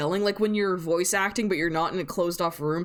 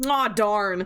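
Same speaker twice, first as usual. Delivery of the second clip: flat, blasé, mildly complaining, level delivery; 2 semitones higher than usual. Mimicking a game character's reaction: mocking a blasé flat delivery. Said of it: "and then he talks and he's like".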